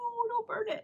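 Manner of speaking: very high, squeaky mock voice. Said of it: "He was like".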